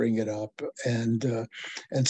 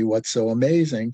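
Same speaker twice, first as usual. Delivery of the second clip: normal talking voice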